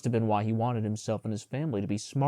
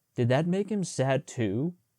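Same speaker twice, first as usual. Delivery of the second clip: plain reading voice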